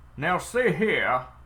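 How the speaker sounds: put-on Southern accent. Asked what western bandits sound like, trying a voice: southern accent. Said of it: "I got a southern accent".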